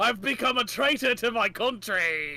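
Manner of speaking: put-on, evil-sounding British accent. In a tabletop game, the Baron of Merlot answers another player: evil British accent. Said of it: "British accent because I'm evil".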